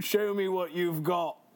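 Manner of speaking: put-on Cockney accent. Voicing a character in a game while aiming for Australian; Colonel in Cockney British accent. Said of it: "I think I fully transitioned to Cockney British".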